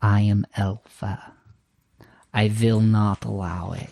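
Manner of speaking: far-off, distant-sounding whispering voice. Describing a scene to a player, a voice whispers from afar: Elfa's distant whisper. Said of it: "the voice whispering in the distance".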